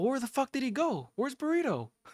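high, mock baffled, confused voice.

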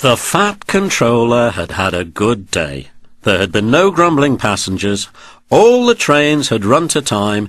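ordinary delivery

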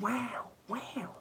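high, very soft, airy and nasal "wow".

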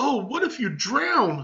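cheerful, chirpy, sing-song, pitched way up. A cousin chimes in as the boy is asked to swim down the sink; happily. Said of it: "his cousin continued happily".

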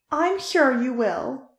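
slow, triumphant, victorious tone. Marinette answers a threat of revenge, victorious. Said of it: "Marinette stated victoriously".

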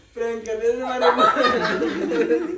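slow speech broken by laughter.

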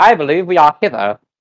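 put-on, high-end posh British accent. Player speaking as their character on spotting the mountain range, posh British accent. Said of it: "In a fucking high-end fucking British accent. Posh accent".

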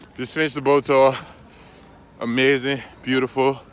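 breathless, panting. Speaker runs through the cold after a boat tour, out of breath. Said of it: "I'm out of breath".

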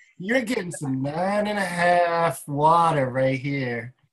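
mock honeyed sweet talk, slow, half drawn out. Quoting what the machine's voice says to them: imitating a sweet-talking voice. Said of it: "she always talks sweet to me".

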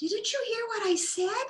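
very high, tiny, squeaky little voice. A flower bud speaks to a rabbit leaning close to it, squeaky voice. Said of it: "The bud squeaked".

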